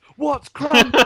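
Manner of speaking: very high, shrill, loud shout. Retelling a show, the speaker shouts a question from the audience: retelling a shout. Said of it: "I shout".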